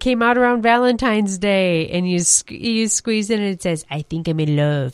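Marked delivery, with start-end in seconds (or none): 3.9-4.9 put-on little dog voice, much lower pitch. Describing a squeezable toy dog to the other speaker, doing the Taco Bell dog voice. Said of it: "in his little Taco Bell voice".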